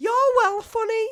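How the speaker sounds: put-on very high Scouse accent. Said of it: "she put on a Scouse accent just to say that".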